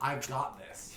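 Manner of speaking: hushed, soft whisper. Making eye contact with both of them in character, whispering. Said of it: "And I'm gonna whisper".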